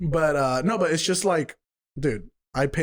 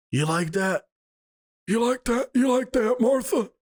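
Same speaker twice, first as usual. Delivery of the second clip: put-on old man voice, pitched higher; 10 semitones higher than usual. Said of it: "You sound like freaking Bill Clinton".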